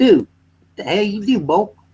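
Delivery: fake accent from outside Atlanta. Describing how people outside Atlanta talk, imitating people outside Atlanta. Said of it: "they'll be all talking like this".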